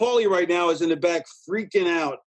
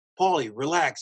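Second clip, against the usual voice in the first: ordinary talk, nothing marked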